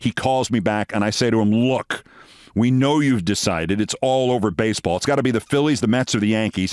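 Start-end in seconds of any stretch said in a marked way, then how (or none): none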